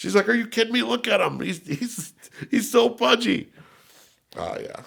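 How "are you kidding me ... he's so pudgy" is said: mock words bubbling into laughter, higher pitch. Retelling his mom's reply to the police, imitating her laughing while talking. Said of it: "And she started laughing".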